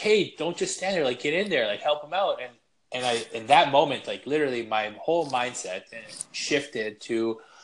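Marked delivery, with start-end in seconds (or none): 0.0-2.4 put-on coach voice, shouting, high-pitched. Retelling a hockey coach's instruction during a game: imitating coach yelling. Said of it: "my coach yelling".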